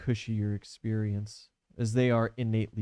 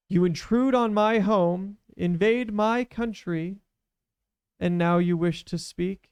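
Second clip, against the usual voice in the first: echoing statue chorus, very high and loud; 9 semitones higher, 4 dB louder than usual. Narrating to the players, the speaker voices the statues: echoing voice of many statues. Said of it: "you hear a voice echo through kind of like all the rooms as if all the statues talk".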